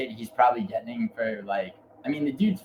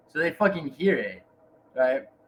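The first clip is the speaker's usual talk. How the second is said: ordinary talk, nothing marked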